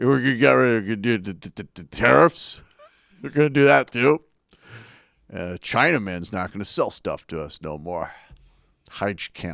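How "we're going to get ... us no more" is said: bloviating blowhard pundit voice. Mocking a political figure's plans: bloviating Steve Bannon voice. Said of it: "I do that bloviating Steve Bannon voice".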